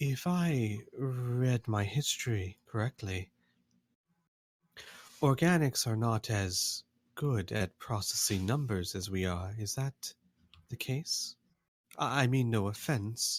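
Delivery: mild, gentler, considerate and tactful delivery. Game master voicing the builders' wife speaking to the player, in a gentler voice. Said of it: "and in a gentler voice".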